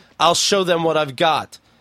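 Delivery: ordinary delivery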